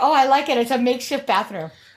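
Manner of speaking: put-on attempted Filipino accent. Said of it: "Do you not know how to do a Filipino accent".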